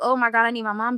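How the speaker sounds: acted-out crying, tearful pleading voice. Recounting being on the floor while her sister and aunt thought she was playing, retelling crying for her mom. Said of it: "And I'm crying".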